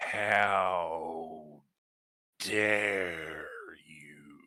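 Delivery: gravelly, deep angry voice. Running a game turn as Colfax steps away: Colfax's gravelly, low, angry voice. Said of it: "in this gravelly, low, angry voice".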